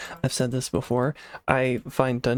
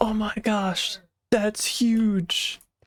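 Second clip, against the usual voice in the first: stretched-out sound, pitched way up; 9 semitones higher than usual. Joking about another player's videos: Lagundo impression. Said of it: "when he finds stuff and he's like".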